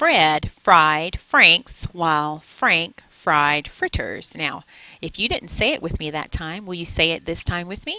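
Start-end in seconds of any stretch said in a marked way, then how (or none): 0.0-4.4 very slow, every word carefully enunciated. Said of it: "slowly and enunciate my words".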